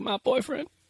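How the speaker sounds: high, soft, giddy, proud voice. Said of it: "you can just hear it in her voice".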